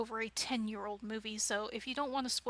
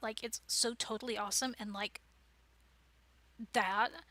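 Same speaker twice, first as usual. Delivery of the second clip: put-on Valley Girl accent and way of talking. Showing how a character voice changes speech: valley girl voice. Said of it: "You can make yourself sound like a Valley Girl".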